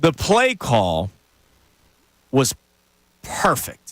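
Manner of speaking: deliberate, unhurried, halting, each word spaced out. In a conversation, speaker announces it and says the sentence slow. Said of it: "I'm going to say this slowly".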